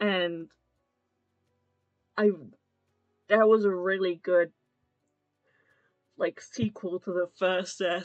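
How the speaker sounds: speaking through a yawn. Reviewing a death sequence as a sequel to the first: yawning while talking. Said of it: "sorry, I'm yawning".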